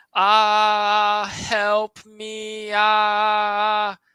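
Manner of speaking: slow, level wailing scream. Reenacting a scream heard in a field at night: reenacting a screamed cry for help. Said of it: "this is my only way to reenact it".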